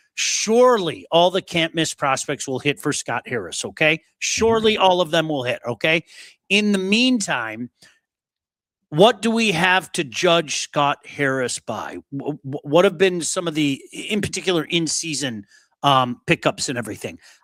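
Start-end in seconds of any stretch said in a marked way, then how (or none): none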